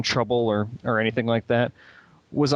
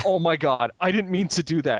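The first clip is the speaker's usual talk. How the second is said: acted stunned voice, mouth open, higher pitch; 5 semitones higher than usual. Retelling own reaction after punching a guard by accident: imitating own stunned self, mouth open. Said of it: "mouth open, going".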